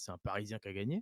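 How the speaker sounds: ordinary delivery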